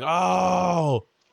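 high-pitched pained moan. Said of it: "I start moaning very loudly".

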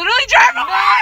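high, loud panicked shouting.

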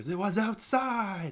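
very high, loud, hot-headed angry yell. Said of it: "what are you yelling for?".

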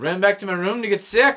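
poor put-on Scottish accent. Telling a story while another speaker urges him on; horrible scottish accent. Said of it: "Keep it going".

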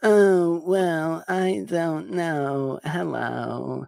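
very slow, breathy, nasal, high drawl. Attempting an impression while discussing a movie: breathy nasal Jennifer Coolidge voice. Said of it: "It sounds like me just going".

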